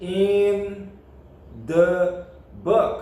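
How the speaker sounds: "in," "the," "book" separated. Explaining the English phrase in the book: pauses between in, the, book. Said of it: "eu estou pronunciando as palavras soltas para que nós possamos entender".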